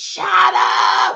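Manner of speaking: put-on high, loud child scream.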